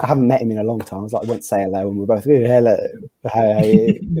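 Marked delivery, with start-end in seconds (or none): 2.3-4.2 mock slurred drunk speech. Retelling greeting a friend at the cricket: imitating drunken slurring. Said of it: "Really slurring our words".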